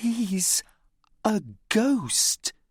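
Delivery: high, private, confiding aside. Reading a story aloud, a girl sees a ghost pirate: quiet voice. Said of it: "she says in a quiet voice".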